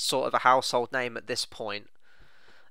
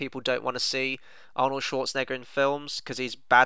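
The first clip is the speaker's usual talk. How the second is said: ordinary talk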